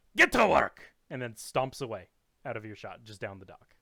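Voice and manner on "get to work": piercing, shrill, very loud booming dwarf shout. Voicing a dwarf who orders the group to work: dwarf yelling. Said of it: "turning to you and yelling".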